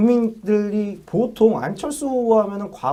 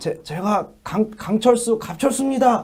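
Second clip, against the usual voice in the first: phlegmy, raspy voice with a campaign-speech style delivery. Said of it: "해봐요".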